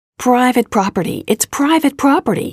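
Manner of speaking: agitated, riled-up, high-pitched yelling. A uniformed guard stops a man walking through the building's lobby; shouting, agitated. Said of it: "he shouted, visibly agitated".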